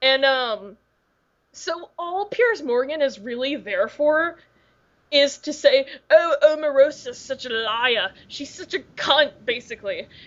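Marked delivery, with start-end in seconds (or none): 6.1-9.3 accented, put-on TV pundit delivery. Imitating Piers Morgan on Celebrity Apprentice: Piers Morgan accent. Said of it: "That's a great accent".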